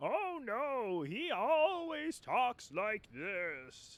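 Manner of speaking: put-on high, slow old voice.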